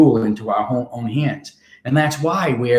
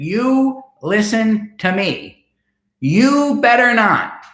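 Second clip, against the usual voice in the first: stern, commanding, authoritative, very high and very slow; 10 semitones higher than usual. Recalling a tall woman who leaned right into your face: imitating an authoritative voice. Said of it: "she had this very authoritative voice".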